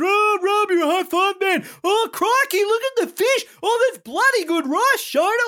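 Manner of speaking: very high, gushing, delighted voice. Discussing a TV episode, imitating Joel gushing. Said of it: "Joel's loving everything".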